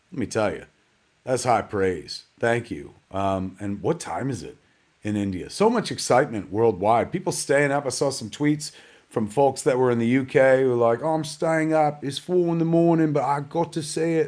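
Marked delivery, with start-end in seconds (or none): 11.0-14.3 terrible, bad put-on British accent. A host quotes tweets from UK viewers staying up late, in a bad British accent. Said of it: "That's the worst British accent you've ever heard".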